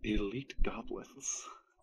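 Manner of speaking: whisper under the breath. In a game, a character ducks back down and whispers to self under breath. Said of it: "like whisper to myself under my breath".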